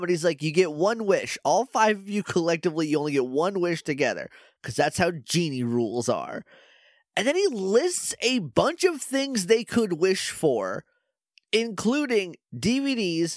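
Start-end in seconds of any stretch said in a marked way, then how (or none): none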